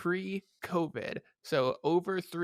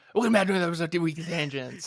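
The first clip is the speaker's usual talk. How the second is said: put-on podcast intro announcer voice, louder; 5 dB louder than usual. Opening the episode by imitating the other speaker's intro line: imitating Dylan. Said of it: "how was my impression of you?".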